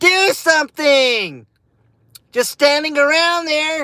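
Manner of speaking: play-acted very high, teasing, taunting shout. Doing the impression again, taunting people standing around: imitating her yelling taunt. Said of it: "That's my impression".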